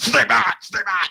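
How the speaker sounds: mock screaming. Recounting how an angry man shouted at them, imitating the screaming. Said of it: "I'm apologetic".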